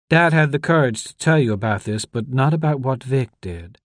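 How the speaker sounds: ordinary delivery, nothing marked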